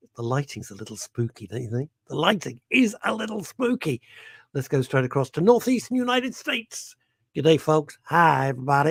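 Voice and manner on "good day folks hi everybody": put-on Texas accent. Greeting listeners in the northeastern United States: put-on Texas accent. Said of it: "I know that is Texas".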